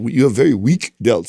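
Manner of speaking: put-on heavy, thick, laid-on Russian accent. Retelling what a female trainer said, imitating trainer's thick accent. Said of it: "she had, like, a thick accent".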